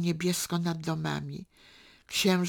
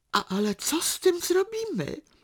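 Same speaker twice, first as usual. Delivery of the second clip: terrified, frightened, very high, swooping voice; 12 semitones higher than usual. Narrator reads Teresa's question to the other woman, asked in terror. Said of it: "Teresa spytała z przerażeniem".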